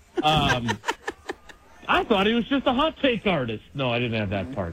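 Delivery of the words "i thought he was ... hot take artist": high, laughing, joking mock disbelief. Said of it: "I jokingly, ... said".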